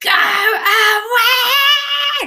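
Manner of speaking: put-on very high, very loud, drawn-out toddler shriek. Retelling a toddler's reaction when someone walked in: imitating a toddler shouting. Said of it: "proper, like, shouting, went red in the face, screaming".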